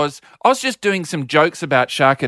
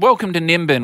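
plain

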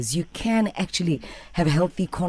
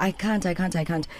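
normal talking voice

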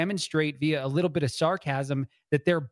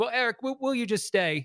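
pretended British accent, pitched up; 7 semitones higher than usual. Retelling the moderator asking a guest to stay: put-on british accent. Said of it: "Maybe I shouldn't pretend to do the accent".

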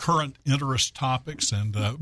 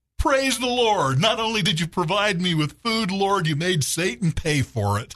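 high-pitched, raised, loud shout; 6 semitones higher than usual. Telling a joke about a lady and an atheist, retelling her shout. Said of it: "and she shouts".

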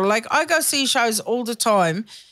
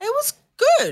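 very high put-on surprised squeak; 13 semitones higher than usual. Retelling what mum says after every show, in a surprised tone. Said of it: "got that surprise sound".

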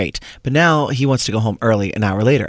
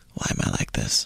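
hushed, soft, self-mocking whisper; 9 dB quieter than usual. Recounting what they said to themselves: acting out soft self-deprecation. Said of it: "In like a very soft, self-deprecating way".

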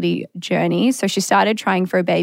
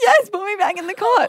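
very high mock sobbing, wailing little child voice. Retelling his answer about going back in the cot: imitating a crying child. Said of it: "fully crying".

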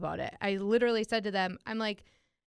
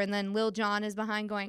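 ordinary talk, nothing marked

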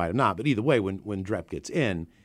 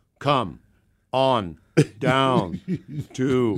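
put-on loud, very slow, drunken, halting, one word at a time; 4 semitones higher, 5 dB louder than usual. Retelling reading ad spots while drunk: imitating drunk reading one word at a time. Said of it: "I'm trying to get through one word at a time".

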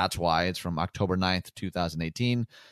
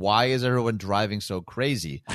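plain

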